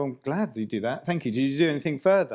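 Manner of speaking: put-on sarcastic tone. Retelling a reply to companies' survey responses: retelling a sarcastic reply. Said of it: "So I'm being a bit sarcastic".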